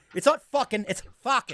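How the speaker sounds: Boston pronunciation of fucking. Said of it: "they always gotta say fucking".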